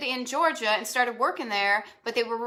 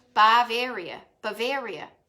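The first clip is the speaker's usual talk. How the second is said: Boston accent creeping into "Bavaria". Speaker repeating a place name as their accent slips back: Boston accent. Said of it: "I can totally hear my Boston accent coming back".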